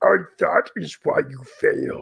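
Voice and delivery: put-on deliberate, rasping, wise old-master voice. Answering a reader's comment, putting on a Yoda voice. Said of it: "my Yoda voice".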